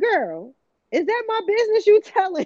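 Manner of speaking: put-on very high, squeaky, indignant and offended child voice. Imagining the child hearing the podcast and complaining: imitating her child. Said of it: "That's really how she talked".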